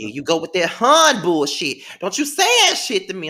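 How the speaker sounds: put-on, very loud scolding. Retelling her mama's reply to being called hun: imitating her mama scolding. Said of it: "She'd be like".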